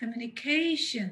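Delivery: ca in communication loud and drawn out. Explaining which syllable of the english word carries the stress: stress on ca in communication. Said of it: "the syllable K is heard stronger, louder and longer".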